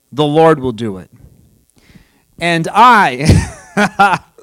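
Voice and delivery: amused, giggling, laughing through the words. Quoting David's words from scripture and finding them funny, laughing while speaking. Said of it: "I'm laughing because I think this is funny".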